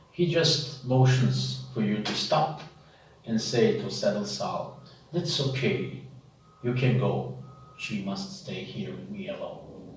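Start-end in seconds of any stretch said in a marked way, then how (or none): 5.1-9.8 put-on older, aging man voice. An older drow motions for the listener to stop and speaks, in an older drow's voice. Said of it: "You see that he's a little bit older drow. / You see that he's a little bit older drow. Then you see there is a few wrinkles all on his, and you see that his eyes are a little bit dull than the other".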